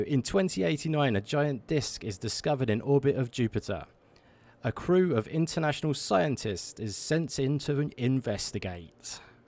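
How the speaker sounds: dramatic, poetic reading voice. Streamer reads the game's opening text to chat in his best poetic voice. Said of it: "in my best poetic voice".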